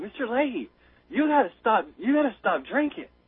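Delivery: put-on speaking with a Canadian accent. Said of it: "in his Canadian accent".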